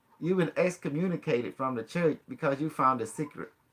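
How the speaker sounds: normal talking voice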